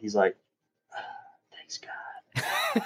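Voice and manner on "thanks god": whisper, higher and quieter. Retelling how he prays out loud at the table: imitating someone whispering. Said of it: "he whispers".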